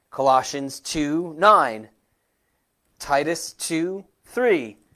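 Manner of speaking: measured, unhurried, slow and deliberate reading. Reading out bible references for listeners writing them down, slow and deliberate. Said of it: "I tried to say that slowly".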